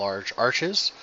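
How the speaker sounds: plain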